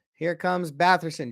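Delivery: ordinary talk, nothing marked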